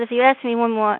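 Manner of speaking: ordinary talk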